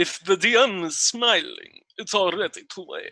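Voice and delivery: put-on fancy, slow, swooping Transylvanian vampire accent. Saying a line in a dice game as the DM asked: Transylvanian accent like Dracula. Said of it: "You are going to say this in a Transylvanian accent".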